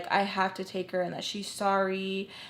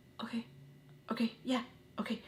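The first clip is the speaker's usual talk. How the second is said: mock whisper, desperate and eager; 3 semitones higher, 9 dB quieter than usual. Retelling how someone reacted, the speaker acts out their reply: imitating someone desperate. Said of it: "so desperate to just like want to go".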